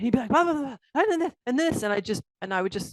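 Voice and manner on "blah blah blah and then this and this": high, fast, worked-up, agitated rant. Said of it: "he'd be all worked up".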